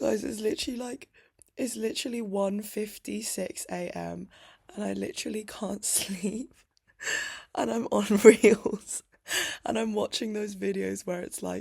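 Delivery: very loud, crying through the words, tearful. Speaker talking to viewers late at night, unable to sleep, crying. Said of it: "I'm on the internet crying to str strangers again".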